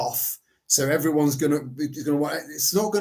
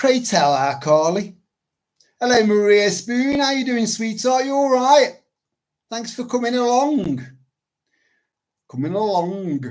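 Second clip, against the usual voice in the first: put-on slight touch of Yorkshire accent; 7 semitones higher, 3 dB louder than usual. Host welcoming a guest, slightly Yorkshire-sounding. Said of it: "That sounded a bit Yorkshire".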